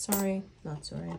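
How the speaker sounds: ordinary talk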